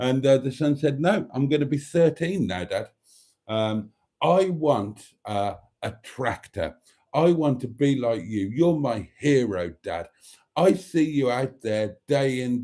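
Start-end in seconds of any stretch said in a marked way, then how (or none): none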